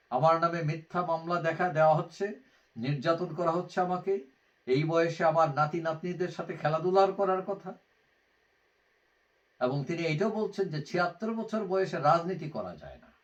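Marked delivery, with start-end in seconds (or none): none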